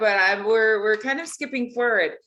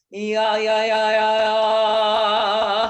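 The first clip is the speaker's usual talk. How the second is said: slow, drawn-out, resonant chest-voice yeahs; 3 dB louder than usual. Showing a student how to feel chest resonance: Tarzan-like chest-pounding yeahs. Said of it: "Like Tarzan?".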